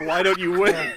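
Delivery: shrill, very high, loud yell. Speaker jokes about someone's laptop sounding far away, retelling him yelling at it. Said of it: "And he's yelling at it".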